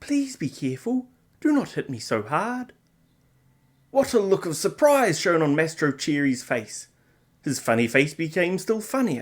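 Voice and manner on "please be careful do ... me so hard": tiny, high-pitched, beseeching, pleading little voice. A wee voice pleads with a man about to strike it, tiny beseeching voice. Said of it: "a wee little voice say in a beseeching tone".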